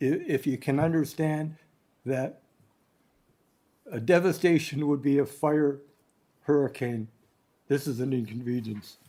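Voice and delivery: choked-up voice, catching with emotion. Explaining how the water event stressed people, choking up a little. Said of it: "I'm choking up a little bit".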